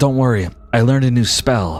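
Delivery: character voice, whispered. A game narrator voices Ventari whispering to a player's character. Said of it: "like he whispers to you".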